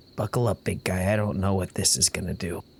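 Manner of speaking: inward, private just-between-us aside. Speaking in character before striking a match: said quietly. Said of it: "quietly say".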